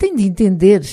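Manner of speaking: plain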